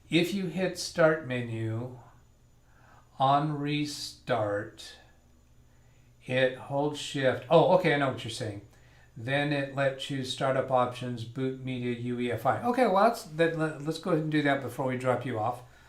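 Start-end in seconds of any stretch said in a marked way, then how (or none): 0.1-7.4 very slow, careful, word-by-word reading aloud. Rereading computer restart instructions aloud to get them right, reading slowly. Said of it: "I gotta read that slower".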